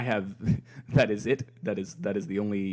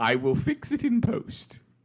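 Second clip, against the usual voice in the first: put-on British accent, pitched very high and swooping; 13 semitones higher than usual. Promising to fix the audio in post: British accent. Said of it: "I don't like your British accent at all".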